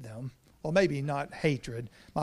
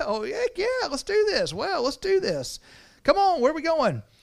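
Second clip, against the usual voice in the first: put-on very high, thick good-ol'-boy southern Alabama accent; 13 semitones higher, 4 dB louder than usual. Imagining Abram answering God like a good old Alabama boy accent. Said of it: "a good old Alabama boy going".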